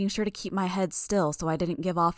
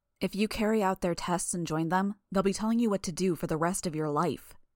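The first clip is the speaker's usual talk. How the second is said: ordinary delivery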